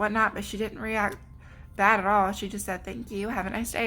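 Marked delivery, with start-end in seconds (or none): none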